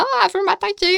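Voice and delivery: play-acted shrill panicked shriek, very high. Recalling running from an approaching bee, retelling a frightened scream. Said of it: "en criant".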